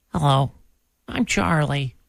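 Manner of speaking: timid, shy little sheep voice. Prompted to let everyone hear the sheep speak: Charlie the sheep voice. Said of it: "Let's let's hear Charlie the sheep".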